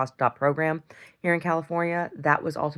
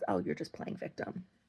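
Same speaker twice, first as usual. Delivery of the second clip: whispered, breathy voice; 4 semitones higher, 12 dB quieter than usual. Retelling what a parent says about her: imitating her father. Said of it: "my father says".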